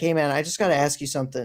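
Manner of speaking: ordinary talk, nothing marked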